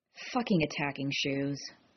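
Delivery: muttered with disgust. Dropping something that smells of sewage, he mutters, disgusted. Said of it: "he muttered, disgusted".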